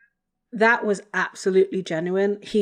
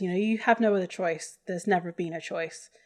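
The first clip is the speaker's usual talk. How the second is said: ordinary talk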